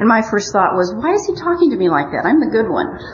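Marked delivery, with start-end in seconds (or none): 0.9-3.0 high, sarcastic self-righteous tone. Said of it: "I was being sarcastic".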